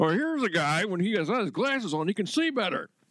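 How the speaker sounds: play-by-play commentator voice. Joining in after another speaker's impression: John Madden voice. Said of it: "Somebody do their Madden voice".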